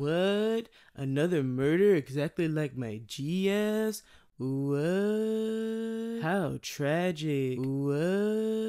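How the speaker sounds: acted, very slow, spaced-out stoner drawl. Retelling how Dream Creep talks to the detectives, imitating Dream Creep stoned. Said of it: "He sounds stoned".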